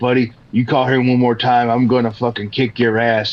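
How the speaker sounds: put-on angry, furious man's voice. Retelling a prank call where a man got angry: imitating an angry man. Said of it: "he got pissed off, and he was like".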